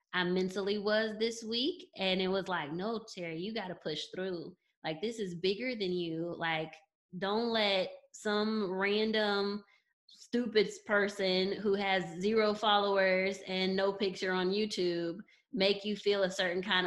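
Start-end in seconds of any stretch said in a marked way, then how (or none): none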